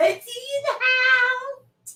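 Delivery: excited, high-pitched, slow, stretched-out delivery.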